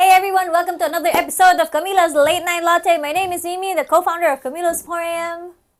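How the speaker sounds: very fast rushed delivery. The host opening a podcast episode and introducing herself, speaking very fast. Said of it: "Why you speak so fast?".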